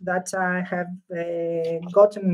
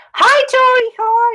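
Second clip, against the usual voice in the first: shrill, full-volume, high-pitched shout; 8 dB louder than usual. Greeting Tori mid-conversation without noticing, shouting. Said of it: "Oh gosh, I'm shouting. Sorry".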